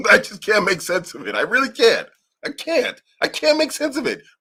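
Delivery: agitated, insistent, worked-up voice, rising pitch. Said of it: "I'm getting worked up here".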